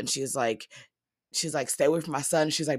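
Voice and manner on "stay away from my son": ordinary talk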